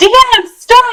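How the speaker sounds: play-acted yelling, pitched way up high. Retelling a book scene where everybody yells at a character: imitating people yelling. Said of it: "everybody's yelling at her".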